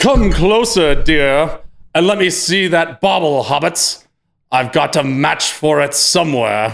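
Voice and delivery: exaggerated put-on British accent. Improvising a film character's line on the spot, very British voice. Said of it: "he's like very British".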